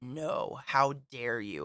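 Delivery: low, slow, stern scolding voice. Showing how she tells off her dogs, in a low voice. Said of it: "I just have to get low and crinkle my eyebrows".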